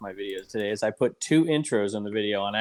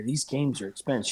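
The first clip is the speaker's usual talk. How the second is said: put-on whisper, slightly higher pitched; 4 semitones higher, 4 dB quieter than usual. Retelling a kid pointing out valuable games, imitating a whisper. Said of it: "he whispered it like nobody was gonna hear it".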